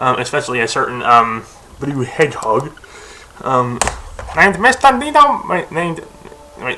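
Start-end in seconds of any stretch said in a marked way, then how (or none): 4.4-5.4 high-pitched mock German accent. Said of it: "why did I just do it in German accent".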